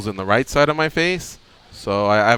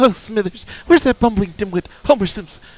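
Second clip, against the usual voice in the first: put-on cartoon old man voice, pitched higher; 9 semitones higher than usual. Doing a requested impression for the others: Mister Burns voice. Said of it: "Mister Burns".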